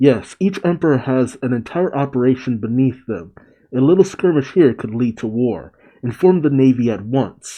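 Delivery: plain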